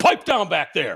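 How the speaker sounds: no-nonsense, commanding police officer voice. Retelling talking to people in the back of the car: retelling own orders as a cop. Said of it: "And I'd be like".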